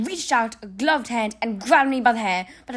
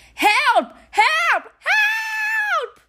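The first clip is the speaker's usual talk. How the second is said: very high, long-held, drawn-out terrified screaming; 3 dB louder than usual. Reading the cornered narrator calling for help toward the door: screaming in terror. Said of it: "I began to scream".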